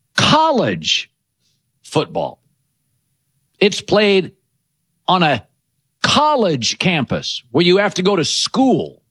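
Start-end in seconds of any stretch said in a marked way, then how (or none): 0.2-7.5 very slow, very deep, spoken word by word. Host naming one favorite sport, saying it slowly. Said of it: "I'll speak slowly".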